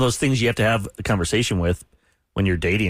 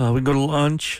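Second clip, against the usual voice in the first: put-on nervous voice, pitched higher; 5 semitones higher than usual. Retelling asking a girl to lunch, imitating own nervous voice. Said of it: "I was nervous".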